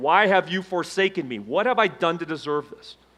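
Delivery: mock yelling, acted out. Speaker recalls their business falling apart while working out, retelling own yelling at ceiling. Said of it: "I'm like yelling at the ceiling".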